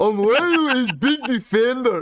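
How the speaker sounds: badly done Brazilian accent. Speaker attempting an accent as the others prompt him, bad Brazilian accent. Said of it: "No, I can't do it".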